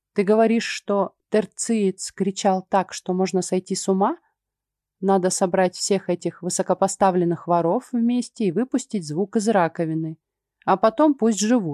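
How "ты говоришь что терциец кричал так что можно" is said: plain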